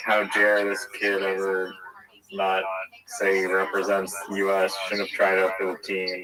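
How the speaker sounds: usual speaking voice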